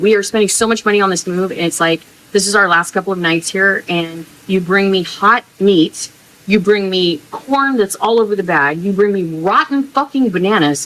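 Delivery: frustrated, fed-up, very upset angry rant. Complaining to viewers about a spoiled grocery delivery before a move: very upset. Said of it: "I'm so upset right now".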